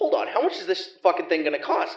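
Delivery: put-on panicked voice. Retelling hearing about surgery finances: retelling own panic. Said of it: "now I'm panicking".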